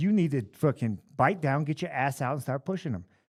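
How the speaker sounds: put-on angry, heated ranting voice. Retelling chewing out a fighter in the corner: imitating angry chewing-out. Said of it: "letting him have it".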